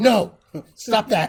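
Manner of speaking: high, loud, scolding yell. Retelling how a chat bot responds to a viewer: imitating someone yelling. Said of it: "is like yelling at him".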